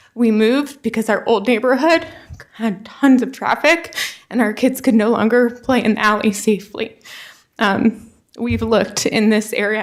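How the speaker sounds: tearful voice, speaking while crying. A resident introduces her family and why they moved here, crying. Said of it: "I'm sorry I'm crying".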